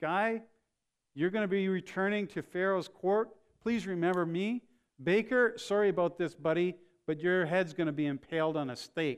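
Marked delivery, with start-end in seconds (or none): none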